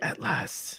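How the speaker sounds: soft, breathy little whisper, barely voiced. Quoting a character's line from a film: whispery quoted line. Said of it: "little whispery".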